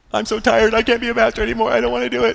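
high, tearful, sobbing voice.

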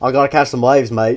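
put-on loud, booming Australian accent. Joking about what Chris Hemsworth would say, in a Chris Hemsworth Australian accent. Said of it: "That was a great Australian accent".

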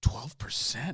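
hushed, stunned whisper.

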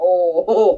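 ordinary talk, nothing marked

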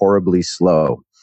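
ordinary talk

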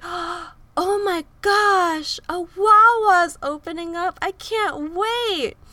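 ecstatic, very shrill, loud, slow, drawn-out scream. Retelling spotting a Wawa opening while driving, retelling an excited scream. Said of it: "I just screamed like".

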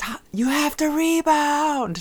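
very high, far-too-loud, drawn-out holler. Retelling yelling at a son during a game: retelling a loud yell. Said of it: "I yelled far too loudly".

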